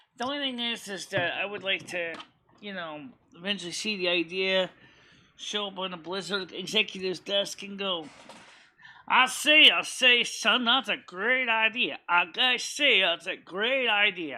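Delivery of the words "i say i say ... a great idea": slow, blustery, puffed-up cartoon southern drawl. Imagining the idea showing up on a Blizzard executive's desk, do a Foghorn Leghorn impression. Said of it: "that's your impression of Foghorn Leghorn".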